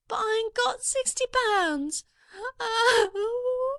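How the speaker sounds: tearful, crying voice. A girl answers about the sixty pounds she offered, crying. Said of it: "Don't cry".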